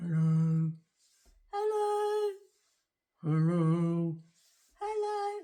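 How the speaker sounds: very slow mumble, muffled behind a covered mouth. Explaining rules for being heard, showing what covering your mouth does: muffled, hand over mouth. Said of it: "It's harder to hear when I've got my hand here".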